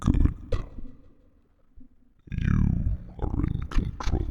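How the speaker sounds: deep, low rumbling voice. Describing a voice in your mind that takes over; deep rumbling voice. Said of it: "The deep rumbling voice in your mind".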